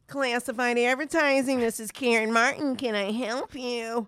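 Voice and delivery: put-on Rochester accent. Retelling how an older coworker answered her phone line: imitating Karen Martin's Rochester accent. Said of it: "the quintessential Rochester accent".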